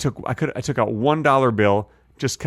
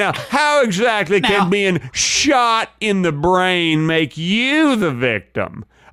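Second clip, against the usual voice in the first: slow, pitched-up southern lawyer voice, grilling tone; 6 semitones higher than usual. Cross-examining the other speaker as a mock attorney: playing a Southern attorney. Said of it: "I'd be a very good attorney in the South".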